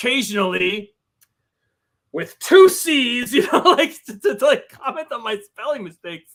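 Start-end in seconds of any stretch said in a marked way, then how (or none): 0.0-3.3 very slow, deliberate voice, every word dragged out. Retell him stopping while reading your chapter aloud to comment on your spelling, in a Tommy Lee Jones voice. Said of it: "in his Tommy Lee Jones voice to be like".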